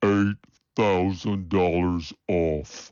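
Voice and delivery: stretched out, drawn-out slow-motion delivery. Car ad announcer replays the price offer, in slow-motion replay. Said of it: "Let's hear it again in slow motion".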